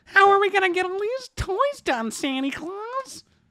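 tiny, very high, squeaky elf voice. Playing an elf asking about getting the toys done, high-pitched elf voice. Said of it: "Higher though? Pitch voice".

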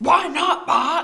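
high-pitched cartoon woman voice. Acting a scene opposite Bart, replying in a Marge voice. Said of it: "I'm doing Marge".

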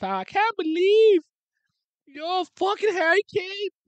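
very high, loud, climbing, squeaky put-on voice. Quoting an English guy's yearly line, imitating a high-pitched voice. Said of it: "He has a high pitched voice, low key. Like".

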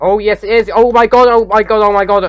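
very loud, high-pitched shouting, over and over. Gamer sees something spreading toward their new house, shouting. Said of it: "I know I'm shouting so much here".

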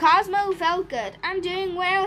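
ordinary delivery

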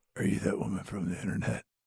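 close-in, creepy, breathy whisper. Retelling a movie scene, imitating the creepy guy at the bar. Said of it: "one of the most terrifying things".

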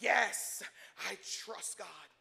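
grave, solemn, deep, very serious put-on voice. A speaker imitates a believer asked about trusting the Lord, in a mock-serious deep voice. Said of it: "the voice gets deep. It gets very serious".

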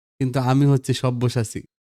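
ordinary delivery

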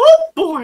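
very high, squeaky cartoon mouse voice. Mid-conversation about a late-night schedule, exclaim in a Mickey voice. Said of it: "Mickey came out".

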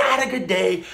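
high, upbeat inflection on not a good day. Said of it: "So look at the inflection".

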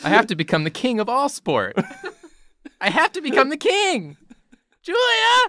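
very high, loud, rising anime-style shout. Performing an anime line, voice getting higher and higher. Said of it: "your voice gets higher and higher".

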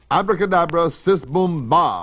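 loud, drawn-out shout. Sitting on a vacuum cleaner she hopes will fly, shouting a magic spell. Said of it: "Maggie shouted".

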